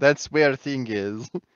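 put-on Russian accent. Speaker working through accents for listeners, now a russian accent.

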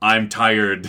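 weary, put-on superhero voice. Mocking how an actor played Batman all movie: tired Val Kilmer Batman voice. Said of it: "spent the entire movie, like, talking in".

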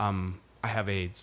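put-on deadpan voice. Retelling a comedy bit from a show: Liam Neeson deadpan delivery. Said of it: "in that very Liam Neeson way".

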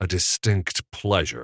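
words hissed with open hostility. Introduced to the new assistant editor, Strickler greets him: hissed. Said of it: "Strickler hissed".

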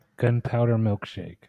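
deadpan, flat, deliberately unenthused delivery. Naming the movie being reviewed, in a deliberately unexcited delivery. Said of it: "Saying it not in an excited way".

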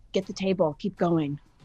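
hushed voice. In character, passing friends during a fight: whispering. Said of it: "I'm gonna whisper".

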